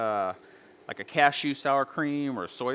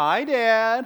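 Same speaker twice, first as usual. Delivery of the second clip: put-on sugary-sweet, raised, high kid-like voice; 9 semitones higher, 6 dB louder than usual. Retelling a call from his twenty-three-year-old, the father is imitating Destiny's sweetest voice. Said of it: "called me with the sweetest voice".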